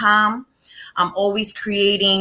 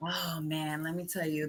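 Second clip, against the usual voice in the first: very quiet, personal undertone, low and soft; 4 semitones lower, 16 dB quieter than usual. Asked to talk about that side of the business, starting in a lowered voice. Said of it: "she lowers her voice when she starts talking".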